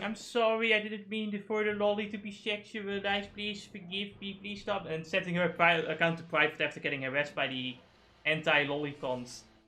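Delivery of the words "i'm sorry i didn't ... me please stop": put-on apologetic voice. Retelling how a VTuber first reacted to harassment: imitating VTuber Kyoto apologizing. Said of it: "at first she started out, like, going".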